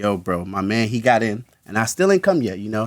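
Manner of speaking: ordinary delivery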